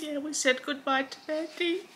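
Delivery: very hushed, quiet, tearful voice, close to crying. Speaking to listeners after having a pet put down, near tears. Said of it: "I'm going to cry again".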